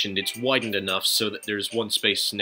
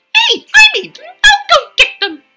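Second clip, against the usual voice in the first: overexcited, very high and loud excited burst; 17 dB louder than usual. In a game scene, the character gets over-excited and sounds too high-pitched. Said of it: "that sounded a little too high-pitched".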